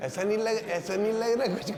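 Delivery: high, teasing, mock-suspicious tone.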